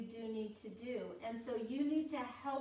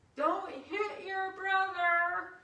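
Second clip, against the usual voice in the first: sugary, put-on nice, sweet voice, pitched up, very loud; 7 semitones higher, 8 dB louder than usual. A parent retells telling her fighting kids off while other parents watched, put-on nice voice. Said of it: "in a really nice voice".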